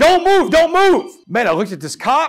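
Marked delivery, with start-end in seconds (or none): 0.0-1.1 shrill, top-of-the-lungs, high, loud scream. Retelling how a cop in riot gear pinned him down, retelling a cop's screaming. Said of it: "he is screaming at the top of his lungs".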